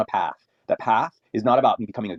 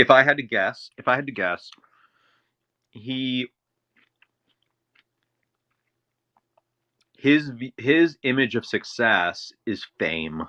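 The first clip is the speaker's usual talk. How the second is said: talking around a mouthful of food, chewing; 3 semitones higher than usual. Guessing what success means to him, the speaker talks while chewing. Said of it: "sorry, chewing".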